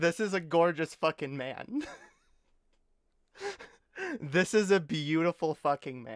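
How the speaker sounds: talking through laughter. Gushing about an actor one has a crush on, laughing while talking. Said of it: "I don't know why I'm laughing".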